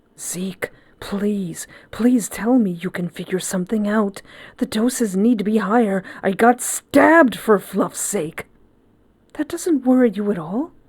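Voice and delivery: urgent, anxious, desperate and worried. Pleading with zeke, a character speaks in a hushed, desperately worried voice. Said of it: "desperate worry in his hushed voice".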